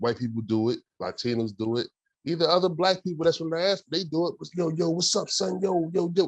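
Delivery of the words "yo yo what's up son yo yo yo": slow, put-on street slang delivery. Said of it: "speak like us... it's very cosplayish".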